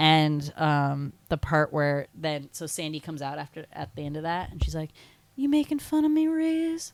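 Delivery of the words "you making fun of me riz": clumsy, bad, very high-pitched Australian accent. Quoting the scene where Sandy comes out, the speaker does her line: bad Sandy Australian accent. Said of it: "I can't even do an Australian accent".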